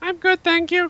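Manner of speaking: silly put-on voice, very high pitch. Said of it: "Stop doing that voice".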